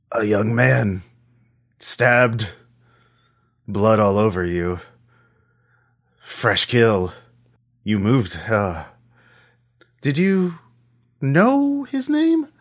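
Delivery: thick, throaty, guttural voice from the gut. A mysterious figure speaks to the player characters in an impossibly deep, guttural voice. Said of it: "it's an impossibly deep and guttural voice".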